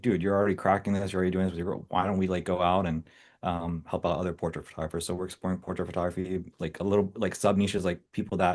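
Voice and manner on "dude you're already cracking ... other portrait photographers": normal talking voice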